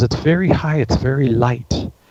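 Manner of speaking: whispered. Retelling how a client answered a question: imitating a client whispering. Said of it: "she starts whispering".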